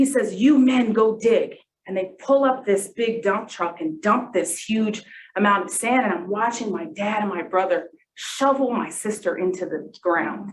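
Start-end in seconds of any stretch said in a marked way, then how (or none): 0.3-1.5 put-on heavy Arabic accent, laid on thick.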